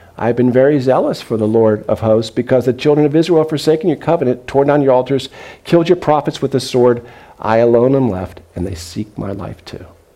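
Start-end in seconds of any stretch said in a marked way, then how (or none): none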